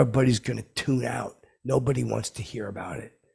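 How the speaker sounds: ordinary delivery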